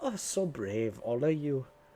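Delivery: cheerful, delighted, admiring tone. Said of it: "claps happily. She's like".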